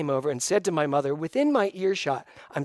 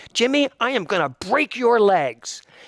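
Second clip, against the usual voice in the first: spunky, feisty, high, loud Irish mom voice; 5 semitones higher, 5 dB louder than usual. Recalling what his mother used to say to her kids, imitating his feisty Irish mother. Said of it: "she was a feisty little Irish woman".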